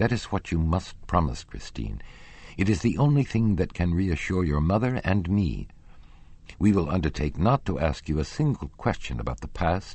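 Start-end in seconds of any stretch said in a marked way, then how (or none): none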